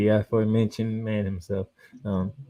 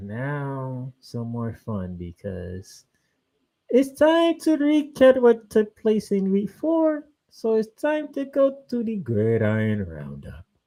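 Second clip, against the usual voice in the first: put-on West Indian, Caribbean-sounding accent; 11 semitones higher, 4 dB louder than usual. Introducing the week four recap segment in a West Indian accent. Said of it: "Why are you speaking like a West Indian all of a sudden?".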